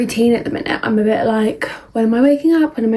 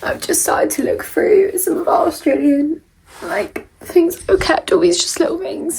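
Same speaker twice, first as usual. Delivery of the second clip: tearful high voice, crying through speech; 7 semitones higher than usual. Looking through little things kept from an Australia trip, crying. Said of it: "I'm literally crying".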